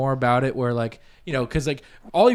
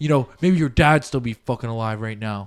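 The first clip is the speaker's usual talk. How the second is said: put-on emotional breaking-down voice, lower pitch; 3 semitones lower than usual. Retelling a scene where he finally breaks down: imitating someone breaking down. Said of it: "he finally breaks down".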